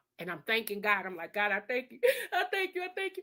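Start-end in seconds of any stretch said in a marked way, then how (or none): 1.3-3.2 acted-out high, tearful voice, through tears. Retelling thanking God after a bill was paid: retelling a tearful prayer. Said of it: "So I'm crying now".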